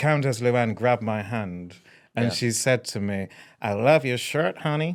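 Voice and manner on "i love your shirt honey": put-on American accent. Recounting an event, the speaker quotes what she said: Countess Luann impression, American accent. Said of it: "I've never heard you do an American accent like that".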